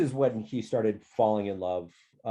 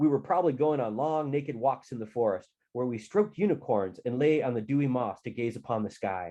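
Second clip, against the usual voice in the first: plain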